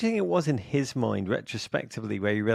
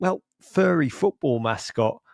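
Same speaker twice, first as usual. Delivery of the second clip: ordinary delivery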